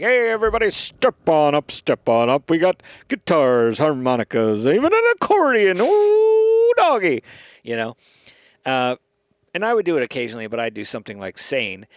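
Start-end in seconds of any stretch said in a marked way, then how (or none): 0.0-7.2 loud, slow, showy, swooping carnival barker voice. Recounting a man's bits on their little pa microphone, carnival barker voice. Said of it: "do like a carnival barker thing".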